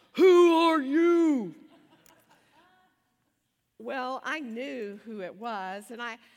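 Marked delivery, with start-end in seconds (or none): 0.2-1.6 put-on very loud, high little-kid monster act. Retelling how a little boy behind the door answered a knock, child's monster voice imitation. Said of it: "putting on his best imitation of a monster".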